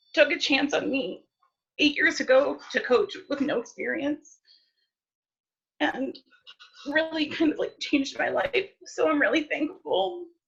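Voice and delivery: tearful, high, crying voice. Thanking the staff for a first coaching chance: crying. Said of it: "I'm sorry that I'm crying".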